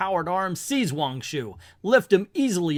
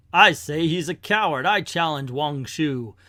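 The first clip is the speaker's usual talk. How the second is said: usual speaking voice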